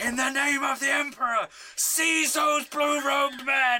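shrill, very high, top-of-the-lungs full shout. Player giving a character's command in a game, shouting at the top of their lungs. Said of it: "At the top of my lungs".

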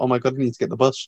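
ordinary talk

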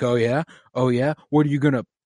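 mocking, taunting. Retelling a TV scene where Theon answers an insult: imitating Theon taunting. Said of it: "And Theon's like".

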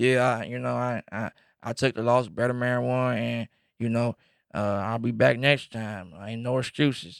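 put-on Southern accent. Retelling a boxer's comments after a fight: thick Southern accent as Errol Spence. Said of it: "He got that real thick Southern accent".

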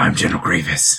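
put-on ghoul voice. Playing a role, introducing himself to the pixie water salesman: General Grievous ghoul voice. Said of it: "This is trying to be my ghoul voice".

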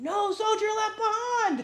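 put-on meanest screaming voice, high-pitched. Describing needing someone over you when shaking, the speaker is imitating someone screaming. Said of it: "someone screaming over you".

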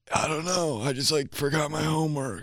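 put-on scratchy voice. Mimicking how they talk about forgotten homework, imitating a scratchy voice. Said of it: "that scratchy voice".

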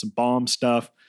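ordinary talk

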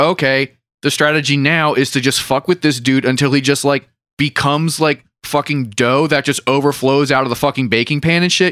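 ordinary talk

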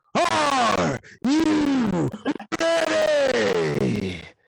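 wide-ranging, creaky, drawn-out wrestling growl.

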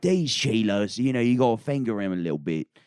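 put-on botched accent sliding into a Cockney accent. Retelling what a man said, bad Steve Irwin impression, Cockney-ish. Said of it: "And that's more Cockney".

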